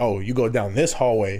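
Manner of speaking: ordinary talk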